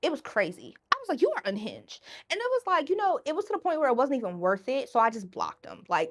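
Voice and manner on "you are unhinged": plain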